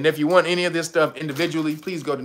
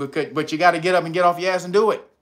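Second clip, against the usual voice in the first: tough talk, faster pace. Speaker urging listeners to get up and act, talking tough. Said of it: "I'm talking tough to you".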